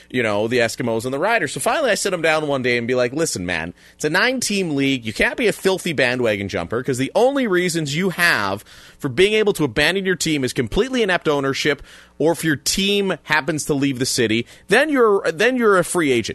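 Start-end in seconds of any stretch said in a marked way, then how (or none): none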